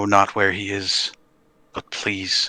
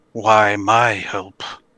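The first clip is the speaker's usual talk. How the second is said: ghostly spirit voice, louder; 6 dB louder than usual. Voicing a ghostly visage rising from a giant's corpse: ghost voice. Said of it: "this, like, ghostly visage rises from the body".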